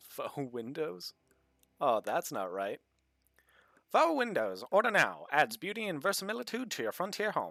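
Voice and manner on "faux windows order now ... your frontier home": put-on old-fashioned 1940s announcer ad-read voice. Reading a product ad aloud in a 1940s announcer voice. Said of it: "I like reading these in the the forties voice".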